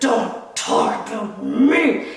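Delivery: strange altered voice, very slow and drawn out. Retelling what a man suddenly said, imitating his changed voice. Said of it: "his whole voice changed".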